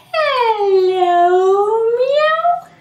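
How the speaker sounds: loud, very high-pitched, mewing cat voice. Leading listeners in saying hello in different ways, in a cat voice. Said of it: "Let's say hello like a cat if you can".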